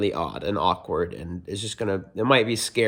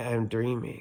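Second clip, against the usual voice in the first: imitated sleepy, sleep-talking voice, quieter; 7 dB quieter than usual. Retelling saying words aloud while asleep in a dream: imitating own sleepy voice. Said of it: "in that kind of voice, 'cause I was sleeping".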